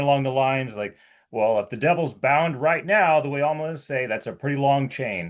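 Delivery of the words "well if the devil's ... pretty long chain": mocking, dry, sarcastic tone. Retelling a jab premillennialists make about amillennialists, imitating a sarcastic remark. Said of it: "And they'll say something sarcastic".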